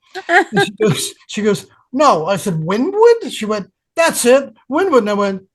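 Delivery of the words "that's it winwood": put-on high-pitched New York Bronx accent. Retelling a phone call with Suzette, imitating Suzette's Bronx accent. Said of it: "She had a real Bronx accent. She talked like this".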